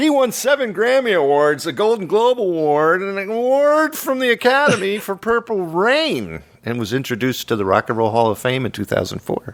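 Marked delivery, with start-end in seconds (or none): 0.0-7.5 very high, swooping radio DJ announcing voice. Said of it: "I love D J voice, so I always make fun of it".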